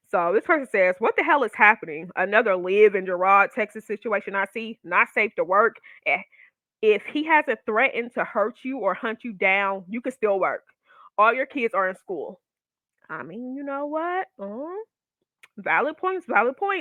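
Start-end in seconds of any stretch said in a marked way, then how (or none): none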